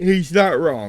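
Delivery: loud, high words spoken through a yawn. Reading a profile aloud, the speaker comments on it while yawning while speaking. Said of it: "Sorry for yawning".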